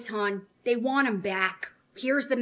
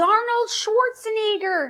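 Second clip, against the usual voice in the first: very high, shrill, loud hooting holler; 10 semitones higher, 5 dB louder than usual. Retelling how a date jumped up during a movie: imitating someone yelling. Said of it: "he jumped up and he yelled".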